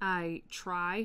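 stress on "try".

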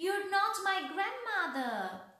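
high-pitched, loud shouted cry. Facing the wolf as it leaps out of bed; yelling.

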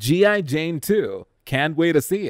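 ordinary talk

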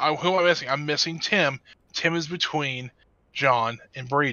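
ordinary talk

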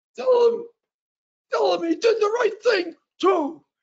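put-on very high old man voice. Retelling what an old man said to pass on, imitating a very old man. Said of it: "he's very, very old. And so he talked like this".

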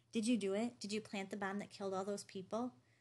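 ordinary delivery, nothing marked

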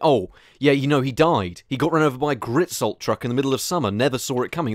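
ordinary delivery

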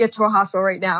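ordinary delivery

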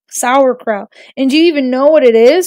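plain

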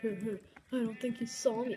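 ordinary delivery

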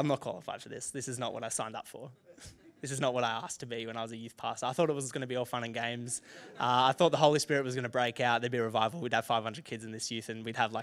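ordinary delivery

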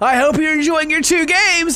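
high, loud, cheery voice.

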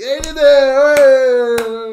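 shrill, very loud, high cheering shout, mineiro stretched. Recalling a celebration as Ebrahim arrives: retelling Ebrahim's shout. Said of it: "O Ebrahim chega gritando assim".

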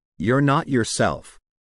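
plain

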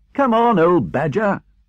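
shrill, high shouted call. A rat calls out to an old badger, shouting. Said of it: "shouted the rat".

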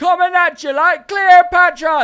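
very high yell, as loud as possible. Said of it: "not a bad Scooter impression".

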